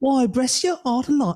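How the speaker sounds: muddled put-on British accent. Reading Mrs Cratchit's lines aloud to the group: Mrs Cratchit in a mixed British Isles accent. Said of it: "it's all of the British Isles all at once".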